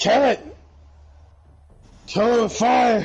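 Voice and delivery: hardened, gruff veteran-type voice. Suggesting a stranger's voice for a phrase, in a rough, hardened veteran voice. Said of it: "a rough like a rough, hardened like veteran type".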